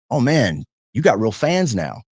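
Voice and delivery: playful, joking mock-teasing tone. Retelling walking up to a player State fans gave an ovation: jokingly teasing. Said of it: "I walk up to him jokingly and I'm like".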